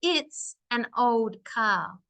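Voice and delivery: very slow, clear, each word apart. Advice on speaking slow and clear: each word clearly separated. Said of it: "I clearly separated all my words from my voice".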